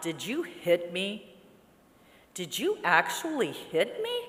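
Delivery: mock, slow, tearful crying out in disbelief. Retelling coming to after being hit: retelling crying out. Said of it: "And crying out".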